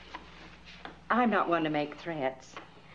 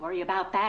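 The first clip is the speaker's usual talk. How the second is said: ordinary delivery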